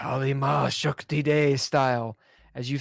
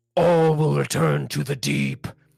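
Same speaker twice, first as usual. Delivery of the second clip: rasping, rough, guttural, raised loud voice; 5 dB louder than usual. Voicing a possessed old man who grabs a player: deep guttural voice. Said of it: "As he says".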